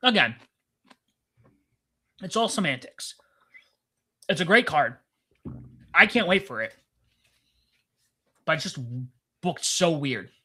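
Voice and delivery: talking with mouth full while eating. Giving an opinion on the card while eating, talking with mouth full. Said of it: "I have this huge piece of broccoli in my mouth".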